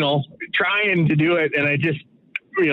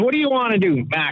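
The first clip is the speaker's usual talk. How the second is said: put-on Boston-accented voice, pitched up; 5 semitones higher than usual. Retelling what Mr. V asked him, imitating Mr. V's Boston accent. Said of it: "so he's got the Boston accent".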